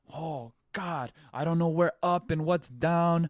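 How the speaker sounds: frantic, high, loud panicked freakout. Acting out a surfer underwater and freaking out: acting out a panicked surfer. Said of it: "you're freaking out".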